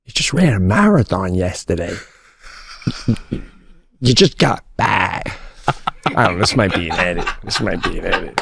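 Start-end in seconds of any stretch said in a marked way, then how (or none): 0.2-5.4 hushed whisper under the breath. Retelling a conversation and a private reaction to it; acting out a whisper. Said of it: "I'm whispering".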